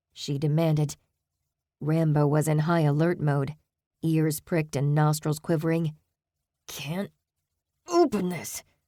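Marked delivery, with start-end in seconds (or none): 6.7-8.7 winded, panting, words pushed out between breaths. Reading a story aloud, a character admits he cannot open it: panting. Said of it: "Beck panted".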